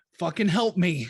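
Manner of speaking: loud, far-carrying shouted cry. Voicing a cornered character who yells out for help: NPC yelling for help. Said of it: "she just yells out".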